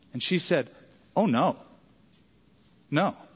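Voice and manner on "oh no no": acted dismayed tone. Retelling how a young worker answered an old man's question, imitating her dismayed reply. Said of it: "like she was even dismayed that he asked the question".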